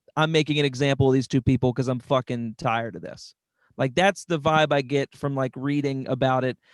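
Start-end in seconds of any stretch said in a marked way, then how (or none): none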